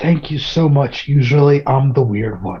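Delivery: whispered in an acted voice. Whispering thanks to a strange woman in a tavern: whispering in character. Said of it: "I'm just gonna whisper to her".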